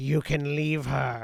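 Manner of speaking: put-on very loud, screechy, furious old woman's voice. Voicing a line overlapped by another voice: angry, screechy old woman voice. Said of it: "overlapped with the voice of a very angry and sort of screechy old woman".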